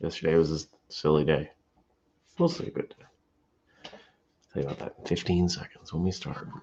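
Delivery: soft, quiet, hushed low voice. First Cup host, before the show starts, talking quietly. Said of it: "I'm talking quietly".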